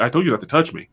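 mock muttering. Retelling what an actor told a co-star who touched him: imitating muttering under breath. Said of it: "under his breath".

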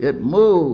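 repelled, disgusted cry, high and loud. Narrator reads the old man holding the monkey's paw, crying out in disgust. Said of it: "he cried with a glance of disgust".

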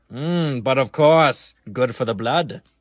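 put-on old-timey voice, puffing a cigar. During an ad read, after a co-host asks about a cigar: old-timey cigar-puffing voice. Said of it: "Are you puffing on a cigar?".

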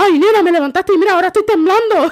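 put-on shaken, scared voice. Retelling what someone said after being woken, imitating someone shaken and scared. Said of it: "Así decía".

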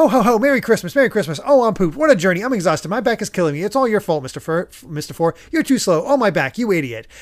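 nonstop, rapid-fire, rattled-off motor-mouth rant. Recalling how they read a character's lines, as a very fast talker. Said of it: "I just read it as a fast talker".

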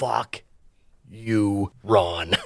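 put-on dying breath. Retelling a character's final words as he collapses, acting out a last dying breath. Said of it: "with his last dying breath, he says".

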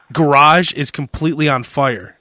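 ordinary talk

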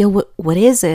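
plain

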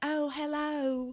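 put-on weird Southern accent, pitched high. Recapping a scene where Teresa approaches Ethan, Teresa's weird Southern accent. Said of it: "uses this weird Southern accent".

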